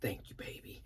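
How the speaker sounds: composed, reserved, stoic, hushed, breathy near whisper. Retelling a reply to someone who says she is proud: imitating a stoic reply. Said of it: "he's all stoic".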